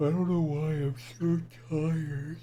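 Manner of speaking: high, loud speech through a yawn. Going through a list of names on a show, yawning while talking. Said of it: "I'm sorry for yawning".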